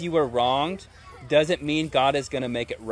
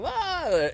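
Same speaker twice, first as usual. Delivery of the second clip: high, freaked-out yelp. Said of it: "And you're like".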